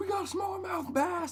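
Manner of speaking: high-pitched mock dude voice.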